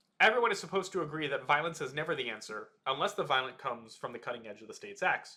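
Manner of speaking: ordinary talk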